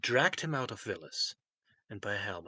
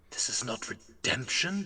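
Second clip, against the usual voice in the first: grinding, hoarse voice, ground out through clenched teeth; 3 semitones higher than usual. In a read story, Veryl answers Marcus, hoarse, through clenched teeth. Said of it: "he grinds out hoarsely through clenched teeth".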